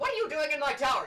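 very high, very loud, shrill angry wizard voice. Game master voicing a wizard finding the players in his tower: angry wizard. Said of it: "starting to get mad".

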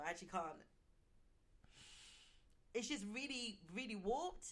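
soft, overcome, emotional voice. A podcast host, discussing abuse victims, breaks off, getting really emotional. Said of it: "I'm getting really emotional".

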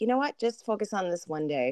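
ordinary talk, nothing marked

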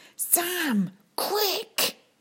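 hissed, very high, swooping. Narrator reads a girl's urgent line to a boy, hissed. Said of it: "she hissed".

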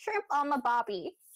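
dumb put-on Australian accent. Speaker mimics American friends mocking their accent, in a stupid put-on Australian accent. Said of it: "they always like put on this stupid accent".

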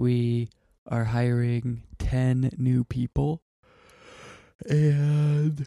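talking through a yawn. Chatting about starting a new job title, yawning while talking. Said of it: "sorry, I'm yawning".

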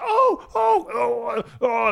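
high, yelping dog cries.

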